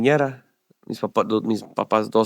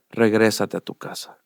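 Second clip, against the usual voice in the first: put-on calm, settled voice. Retelling hearing a voice telling them to go back home: imitating a calmer voice. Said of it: "con una voz ya más calmada".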